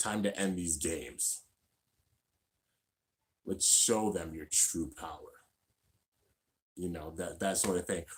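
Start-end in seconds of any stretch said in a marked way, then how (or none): 0.0-5.2 possessed, taken-over character voice. Giving example lines for characters, this one as Hydra possessed. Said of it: "Hydra being possessed".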